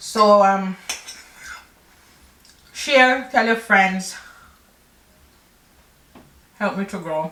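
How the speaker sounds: speaking with mouth full of food. Wrapping up a video while eating the eggs, talking with a mouthful. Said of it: "Not me talking with a mouthful".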